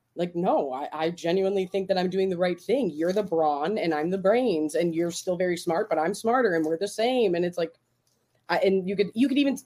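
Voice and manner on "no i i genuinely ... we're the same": ordinary talk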